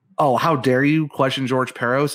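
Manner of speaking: plain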